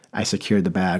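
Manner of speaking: ordinary talk, nothing marked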